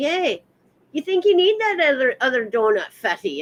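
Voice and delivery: nasty, mean put-on Irish girl accent. Describing the irish girl who tells him off, doing her put-on mean irish girl voice. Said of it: "The Irish girl tells me".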